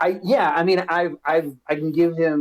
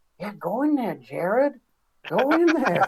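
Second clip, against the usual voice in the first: whispered voice, higher; 6 semitones higher than usual. Voicing a character urging the creature into the house: whispering. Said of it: "you hear D T D whispering".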